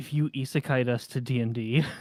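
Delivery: close, leaned-in, confiding stage whisper. Leaning in real close to a fellow player, half-whispering. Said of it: "lean in real close and whisper this".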